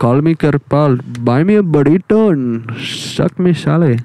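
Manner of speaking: mock, put-on Indian accent. Speaker recreates lines from a viral phone call, in an Indian accent. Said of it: "All in the Indian accent".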